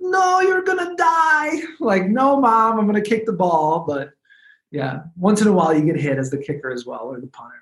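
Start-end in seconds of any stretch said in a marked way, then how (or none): 0.0-1.6 put-on Eastern European accent, pitched very high. Recalling his mom objecting to him playing ball, imitating mom's eastern european accent. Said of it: "in her Eastern European accent".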